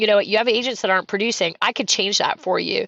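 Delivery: ordinary talk, nothing marked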